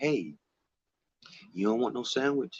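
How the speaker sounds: gentle, soft, undemanding half-whisper. Describing how the voice inside their head speaks, the speaker quotes it in a half-whisper. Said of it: "It's like a whisper".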